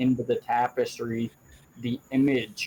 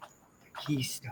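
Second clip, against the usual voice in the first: barely voiced, soft, ancient-sounding elven whisper; 10 dB quieter than usual. Game master voicing a whisper in a player's ear: soft ancient elven whisper. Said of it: "whispered in your ear in that same ancient, soft, elven voice".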